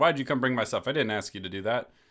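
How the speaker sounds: loud yelling. Retelling a film scene where one character yells at another: imitating someone yelling. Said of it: "So he's yelling at him".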